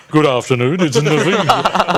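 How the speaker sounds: slow, put-on on-air radio announcer voice. Asking a young announcer if he uses an announcer voice: put-on radio announcer voice. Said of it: "are you one of those announcers who's".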